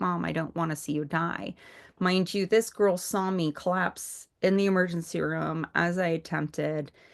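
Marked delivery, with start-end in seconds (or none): 0.0-1.5 imitated tearful weeping, crying voice. Retelling what her daughter said to her while crying: imitating someone weeping. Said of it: "she's like crying, just weeping".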